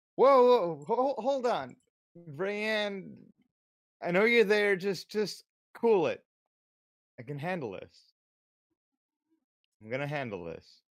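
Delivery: high, urgent, halting character shout. Playing Norik, calling out to a hidden party member: shouting in character. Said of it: "Norik just shouted out".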